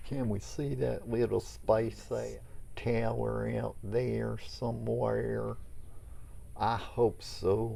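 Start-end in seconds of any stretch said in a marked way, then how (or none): 6.6-7.8 easing into a slow Oklahoma accent. Hoping to spot the SpaceX tower out there: possibly Oklahoma accent. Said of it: "what accent was that?".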